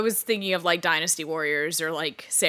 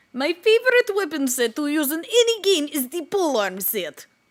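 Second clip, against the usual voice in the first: put-on thick Russian accent, much higher; 10 semitones higher, 4 dB louder than usual. Talking in character until a listener can't follow, thick russian accent. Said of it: "Your your Russian accent actually got so thick there".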